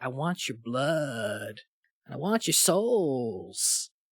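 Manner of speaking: acted, low, sinister, menacing villainous voice. Speaker retells how a character says his line, imitating a sinister voice. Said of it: "he says it with like just this sinister".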